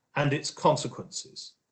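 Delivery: ordinary delivery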